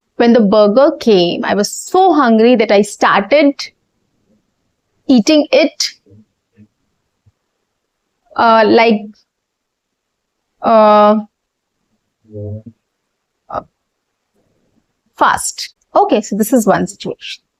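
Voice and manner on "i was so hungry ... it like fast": long hesitant pauses before saying "fast". Showing pause types, situation one: long pauses before "fast". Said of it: "so first is a long pause".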